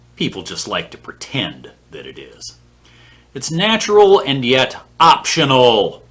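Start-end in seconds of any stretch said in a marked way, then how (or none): 3.3-5.9 "optional" stressed, higher-pitched and louder. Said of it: "I can't stress that word enough".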